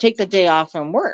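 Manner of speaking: ordinary delivery, nothing marked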